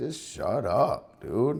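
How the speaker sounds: mock under-breath mutter. Retelling telling a screaming kid on a plane to stop, muttered under breath. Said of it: "I kinda said it under my breath".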